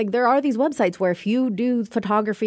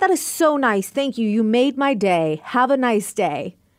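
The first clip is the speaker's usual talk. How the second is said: slow, fake-sincere tone dripping with sarcasm. Describing how they answer people being nice: acting out sarcastic thanks. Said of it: "Very sarcastic".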